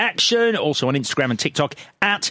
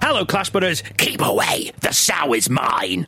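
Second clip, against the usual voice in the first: fake voice of a possessed person. A host opens the Clash of the Titles episode, in a possessed voice. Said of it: "the best possessed voice on the episode".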